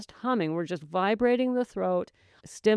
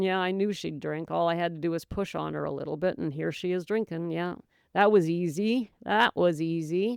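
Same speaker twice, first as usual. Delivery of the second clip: plain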